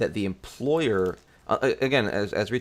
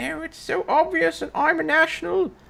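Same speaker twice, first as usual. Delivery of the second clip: very high, exaggerated, overdone British accent; 3 dB louder than usual. Explaining that people assume she is british, do an imitation of her british accent. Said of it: "Dave does do a good example of my British accent".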